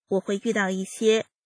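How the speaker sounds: ordinary delivery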